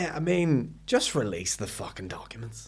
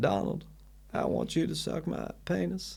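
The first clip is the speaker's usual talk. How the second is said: breathed out, barely voiced; 5 semitones higher, 6 dB quieter than usual. Doing Bill's voice after being asked to: Bill Clinton voice. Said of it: "Do it in his voice".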